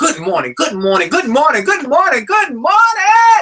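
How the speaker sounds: very high, loud, swooping, eager and energetic. Speaker demonstrates repeating a morning greeting many times, energetic and enthusiastic. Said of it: "I'm saying it with energy and enthusiasm".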